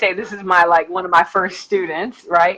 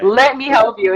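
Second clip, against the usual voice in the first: mock begging tone, higher; 4 semitones higher than usual. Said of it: "I beg".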